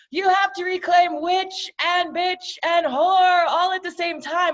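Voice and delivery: booming, high-pitched proclamation. Retelling a voice in their head after reading a hashtag, booming voice. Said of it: "this booming voice in my head goes".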